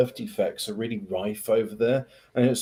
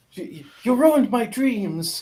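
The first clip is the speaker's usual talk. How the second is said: very high-pitched put-on non-native English accent; 9 semitones higher than usual. Talking about Greta Thunberg, doing a Greta Thunberg accent imitation. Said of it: "I'm I'm trying to do her accent".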